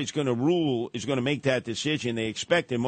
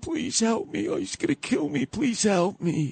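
mock tearful crying, very high-pitched pleading voice; 10 semitones higher than usual. Retelling a subway attack, imitating the woman's plea: imitating a woman crying. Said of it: "And she was crying".

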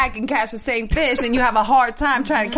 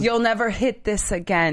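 ordinary talk

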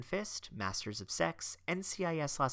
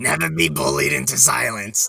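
very loud, rough, rasping belted delivery; 17 dB louder than usual. Repeating a quote after being asked to do the voice: Harvey Fierstein voice. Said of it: "I'm sad that you didn't do the voice".

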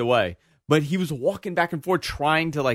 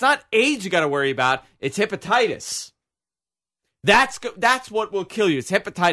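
mock, high-pitched, mild half-yelled rant; 5 semitones higher than usual. Recounting security work in Afghanistan, imitating a man's screaming: retelling a man screaming. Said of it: "And he's screaming".

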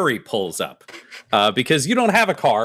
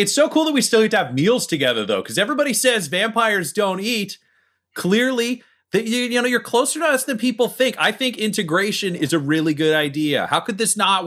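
raised, higher-pitched yell from a distance; 9 semitones higher than usual. Retelling what a man yells from where he is during a meal, retelling someone yelling. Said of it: "He's just like yelling from where he is".

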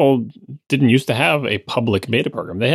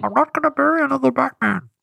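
very high, creaky, raspy character voice. Doing an attempted Bane impression for the other speaker: Bane impression. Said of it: "That's not Bane".

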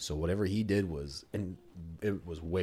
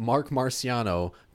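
loud, slow, drawn-out mocking delivery. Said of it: "this fucking clown is going".

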